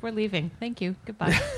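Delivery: mock-polite, put-on polite tone. Retelling how canada left, in a mock-polite goodbye. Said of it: "Canada was polite".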